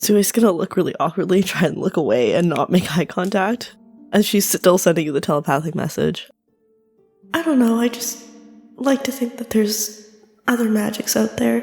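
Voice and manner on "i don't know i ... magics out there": sad, heavy-hearted voice. A player speaks in a role-play scene, sounding sad. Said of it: "You sounded sad there".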